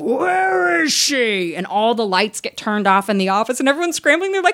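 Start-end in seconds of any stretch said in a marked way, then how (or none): 0.0-1.5 big, booming, pitched-up shout. Retelling the director arriving at the office, calling out in a big booming voice. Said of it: "this big booming voice".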